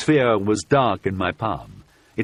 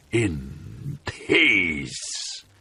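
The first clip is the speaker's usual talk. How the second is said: low, jeering, mocking, dreadful voice; 4 semitones lower, 4 dB quieter than usual. A narrator voices a terrible voice answering the speaker, mocking terrible voice. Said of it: "said the terrible voice with a mocking laugh".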